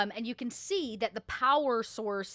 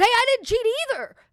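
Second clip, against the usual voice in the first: very high, loud shout from far off; 13 semitones higher, 11 dB louder than usual. Voicing a prisoner far down the cells: calling out from far away. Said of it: "he kinda says from, from way down the line of cells".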